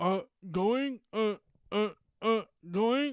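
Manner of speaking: very slow, high, loud, halting stutter. Mocking an official reading a script about a crash: imitating someone stuttering. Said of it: "why are you stuttering".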